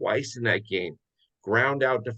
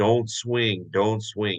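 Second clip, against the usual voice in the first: usual speaking voice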